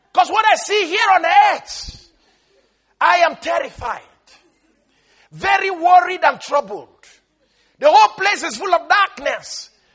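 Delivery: high, loud, desperate screaming. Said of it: "he screams out".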